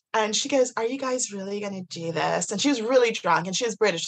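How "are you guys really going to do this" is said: fake, put-on, out-of-place Californian accent. Retelling what a woman asked him and his friends, put-on californian accent. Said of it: "I don't know why I'm doing that accent".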